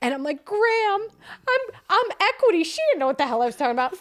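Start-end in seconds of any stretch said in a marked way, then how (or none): 0.5-2.6 very high-pitched, loud, tearful crying speech. Retelling a phone call to a grandmother while crying: imitating own crying. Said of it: "So I'm crying".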